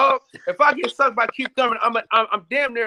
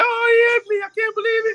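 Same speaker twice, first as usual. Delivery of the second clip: fake crying, much higher and faster; 12 semitones higher than usual. Speaker showing friends he can cry on the spot, fake crying. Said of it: "y'all know I can cry on the spot".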